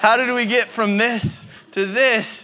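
high, slow, laughing, disbelieving delivery.

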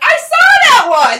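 play-acted gleeful outburst, very high and very loud. Retelling reading out the morally offensive movies: imitating own excited exclamation. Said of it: "so excitedly".

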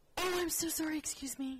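very high put-on dumb blonde voice, fake-innocent. Retelling stepping on a groper's foot on a bus: retelling a put-on dumb blonde act. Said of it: "the batting eyelashes, dumb blonde thing".

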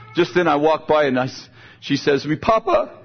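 ordinary delivery

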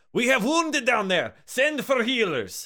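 rallying shout. Narrating a raid, the captain rallies the troops, as Captain Munder, rallying shout. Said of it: "she rallies the troops".

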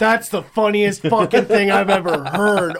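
emphatic, loud, high-pitched blurted exclamation. Retelling how Kyle reacted to a joke: imitating Kyle. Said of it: "Kyle was like".

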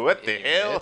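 fake Russian accent. Showing how to do the accent with the tongue at the back: fake Russian accent. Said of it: "in the Russian accent".

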